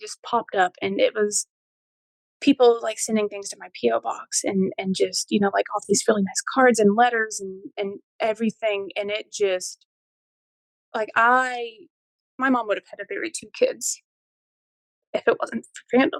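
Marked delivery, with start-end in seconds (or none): 9.0-16.2 voice breaking with emotion, close to tears. Thanking supportive strangers who sent cards and letters: choking up, close to tears. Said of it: "I told myself I wasn't gonna cry".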